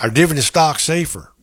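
put-on Tennessee accent. Host rereads Jim's question in a Tennessee accent. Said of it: "Was that a Tennessee accent?".

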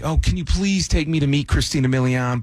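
put-on girl voice, mock begging tone. Speaker retells a girl begging to be taken to meet christina milian, imitating her begging. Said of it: "She begged".

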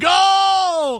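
loud cheering yell on go.

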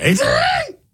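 very high, squeaky cartoon dog voice. Radio host taking birthday calls, doing his Scooby-Doo impersonation. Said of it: "It's my Scooby-Doo impersonation".

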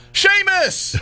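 loud, high-pitched yell.

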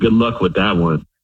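ordinary delivery

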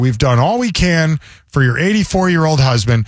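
ordinary talk

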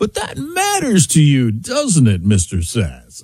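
slow, swooping, drawn-out smug drawl. Mocking a TV interviewer's manner: imitating Scott Pelley's slow voice. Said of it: "he is just such an act in his slow voice".

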